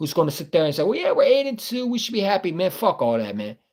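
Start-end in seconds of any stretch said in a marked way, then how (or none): 0.8-2.7 pitched-up, put-on goody-goody positivity. Content creator mocking the always-positive take on an eight-and-two team: mock-positive content creator voice. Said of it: "Mister Positivity, goody, goody content creator".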